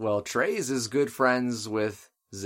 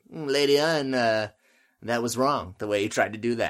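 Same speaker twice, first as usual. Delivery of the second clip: patronizing, condescending, musing, mulling it over; 3 dB louder than usual. Imagining Treize scolding Lady Une: imitating Treize patronizingly. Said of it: "so he can be like".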